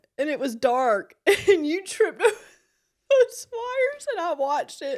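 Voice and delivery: very high, loud, talking through tears of laughter. Telling another speaker about his fall over the cords: crying with laughter. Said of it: "I'm crying".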